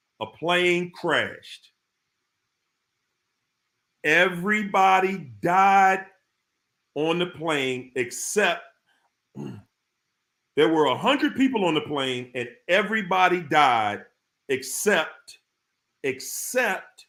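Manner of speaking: slow, deliberate, each word laid down carefully. Telling the listeners a riddle, saying it slow on purpose: speaking slowly. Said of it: "I'm going to say it slow".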